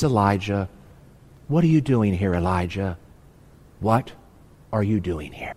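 tender, gentle, hushed, soft-spoken small voice. Quoting god speaking to elijah: gentle soft half-whisper. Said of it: "The still, small whisper of God says".

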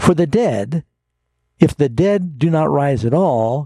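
high, slow, new phrase starting, rising on "dead". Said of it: "I'll try and emphasize this in the right place".

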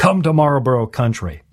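put-on old-school commercial announcer narrator voice. Recalling old cigarette ads, doing his best Marlboro ad narrator impression. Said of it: "That's my best version".

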